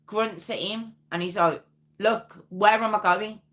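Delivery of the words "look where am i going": insistent, firm, blunt no-nonsense tone. Retelling an officer asking where to go a second time: imitating a firm demand. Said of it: "he had to be quite firm with him".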